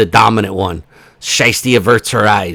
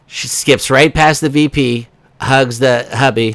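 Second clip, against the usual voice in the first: plain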